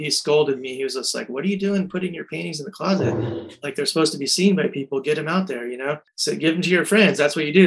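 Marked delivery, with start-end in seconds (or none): none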